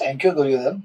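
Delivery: low, soft, gentle voice.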